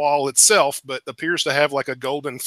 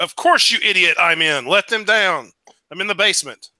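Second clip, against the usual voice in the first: far-off call, sounding distant; 4 semitones higher than usual. Voicing Master Teluthius answering from the basement: calling from far away. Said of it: "way in the background, in the distance, you hear".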